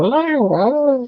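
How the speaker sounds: put-on very high, jumpy, drawn-out, startled old person's voice. Showing how a jumpy old person sounds: jumpy old person voice. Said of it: "Unless they're jumpy and then they sound like".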